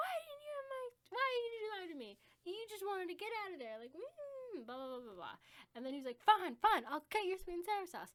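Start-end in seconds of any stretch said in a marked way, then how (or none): 0.0-3.8 put-on, high, furious screaming outburst. Retelling how she yelled at him after he lied to her, reenacting angry screaming. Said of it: "I was just screaming like".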